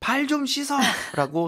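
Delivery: high, slow, angry yell.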